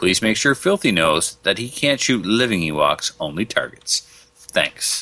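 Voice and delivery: ordinary talk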